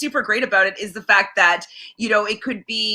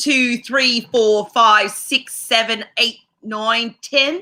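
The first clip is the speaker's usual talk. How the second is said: put-on Australian accent. Talking about which accents they can do, the speaker demonstrates: australian accent. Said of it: "Aussie's like".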